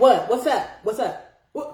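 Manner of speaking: curt, cold, dismissive delivery. Acting out answering a disliked caller's phone call: curt cold phone greeting. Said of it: "why you talking like, "What's up? What do you want?"".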